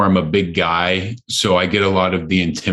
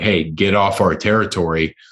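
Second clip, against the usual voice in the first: mock threatening, intimidating tone. Retelling confronting sellers at a festival: imitating an intimidating warning. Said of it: "we're intimidating these guys like".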